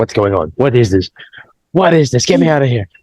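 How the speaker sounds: acted, fast, frantic, rattled-off panicked outburst. Retelling a story character hearing Italian: imitating panicked Danny. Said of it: "Danny was panicking".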